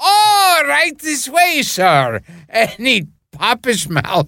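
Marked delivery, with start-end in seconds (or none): 0.0-2.2 very high, slow, swooping, sing-song maître d' voice. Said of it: "and it would always be".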